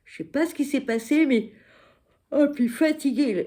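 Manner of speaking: talking through a yawn. Recalling a hard, tiring period, yawning while speaking. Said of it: "Pardon, je baille".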